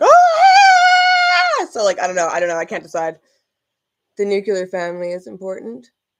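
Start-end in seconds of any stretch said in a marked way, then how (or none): 0.0-1.7 sudden, high-pitched, loud scream. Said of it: "I'm, like, just like".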